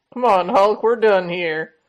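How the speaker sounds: put-on Western cowboy voice. Acting out a comic scene, voicing Sam: Sam in a Western voice. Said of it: "gave him, like, a Western voice".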